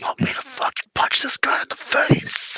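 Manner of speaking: hushed, breathy whisper, barely voiced. Speaker retells a man leaning into someone's ear, retelling a whisper. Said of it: "he whispers and he goes".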